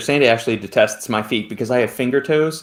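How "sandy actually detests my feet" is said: ordinary delivery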